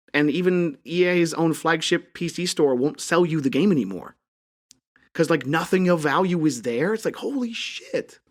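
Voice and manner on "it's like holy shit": voice breaking, breathy, hushed near whisper. Agog at how people treat games nowadays, voice cracking. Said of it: "my voice cracked again".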